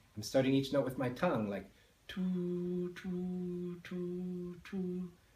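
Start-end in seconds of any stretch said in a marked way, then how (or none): 2.1-5.1 soft, higher-pitched whisper on "two". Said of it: "I'm just whispering".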